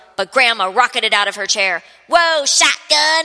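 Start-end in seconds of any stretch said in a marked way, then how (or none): 2.1-3.3 high, loud, bellowed shout. Narrator reads Grandma rocketing out of her chair, bellowing. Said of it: "she bellowed".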